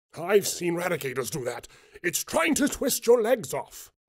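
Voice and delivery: high, rising, panicked and alarmed voice. Reading a story aloud, a character warns of danger: panicked tone. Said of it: "Mustang said in a panicked tone".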